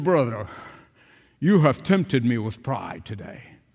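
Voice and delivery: put-on low-pitched Oxford-accented English. Speaker retells an older man's words to him over lunch, in an Oxford accent. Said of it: "in his Oxford accent".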